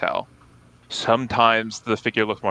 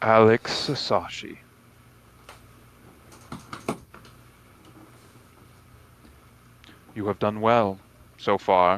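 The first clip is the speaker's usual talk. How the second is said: hundred voices speaking at once as one chorus. A game master voices an unseen presence answering a player, in a hundred voices at once. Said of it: "in 100 different voices".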